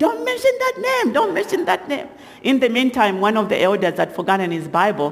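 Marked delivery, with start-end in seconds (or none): 0.0-2.1 mock very high, cowering entreaty. Retelling a woman's plea after you spoke, imitating a cowering plea. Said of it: "she's cowering".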